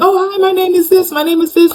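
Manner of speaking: very high-pitched, bubbly, cheerful voice.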